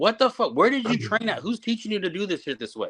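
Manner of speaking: fed-up, exasperated, hurled chewing-out. Retelling yelling at nervous wrestlers backstage: retelling own yelling. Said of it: "because I'm yelling".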